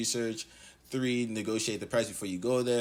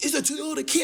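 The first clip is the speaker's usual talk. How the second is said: acted shouting, higher and louder; 5 dB louder than usual. Retelling a car seller's words: imitating a seller shouting. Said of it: "they just start shouting in the car".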